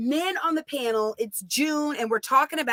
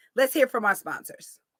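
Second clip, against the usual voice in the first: ordinary talk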